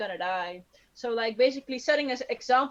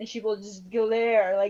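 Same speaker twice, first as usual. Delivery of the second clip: ordinary talk, nothing marked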